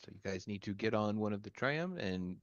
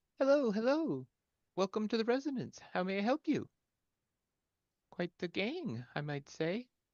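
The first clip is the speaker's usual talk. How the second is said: female halfling character voice, higher and louder; 12 semitones higher, 4 dB louder than usual. Voicing a shop's halfling shopkeeper greeting the arriving group: female halfling shopkeeper voice. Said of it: "you see a shopkeeper, a female halfling ... she says".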